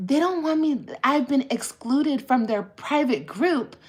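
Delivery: high-pitched yelling. Retelling a story about Gracie, imitating Gracie yelling. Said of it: "And she was yelling it".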